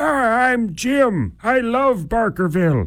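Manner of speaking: put-on very high-pitched elderly man's voice. Taking on an alter ego, the speaker introduces the character: old man voice as Jim. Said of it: "I sound like an old man, don't I?".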